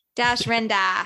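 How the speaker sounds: terrible, bad Boston accent. Saying a character name as another speaker asks: terrible Boston accent. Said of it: "with a Boston accent".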